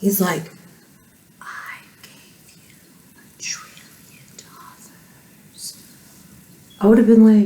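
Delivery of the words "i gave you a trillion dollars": drawn-out, slow, hushed, breathy whisper. Mocking a speech from yesterday: imitating Joe Biden whispering. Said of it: "why are you whispering?".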